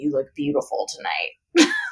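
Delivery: low, gruff, rough masculine voice. Telling a story where a woman hears a voice behind her, rough male voice. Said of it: "this like rough male voice that's like".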